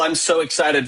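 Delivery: ordinary talk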